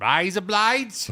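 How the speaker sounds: Australian accent. Asked to say a phrase, the speaker tries it in Australian accent. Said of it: "in Australian accent".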